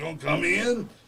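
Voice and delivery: rough, roughened voice with creaky quality. Retelling what the wrestler said at the door: Macho Man voice. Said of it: "he talks like that for real".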